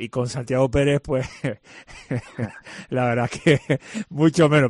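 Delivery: playful, laughing delivery.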